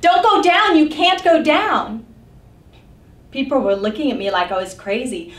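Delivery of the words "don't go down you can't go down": mock very high-pitched, loud yelling. Retelling a crowded subway escalator moment, retelling yelling at people. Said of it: "I started yelling at people".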